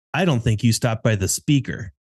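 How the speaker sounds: put-on angry voice. Retelling what the angry drive-through worker said: imitating an angry worker. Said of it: "angry with me".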